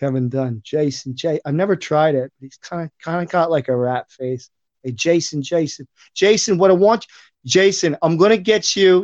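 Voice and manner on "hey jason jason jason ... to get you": higher-pitched New York voice. Answering a request for an impersonation: Kevin Dunn impression. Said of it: "do you do a Kevin Dunn impersonation?".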